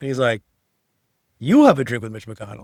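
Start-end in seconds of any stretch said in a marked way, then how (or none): 1.4-2.6 loud, rough delivery. Retelling a joke Obama told about partisan politics: attempted Obama impression. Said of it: "I didn't do it right".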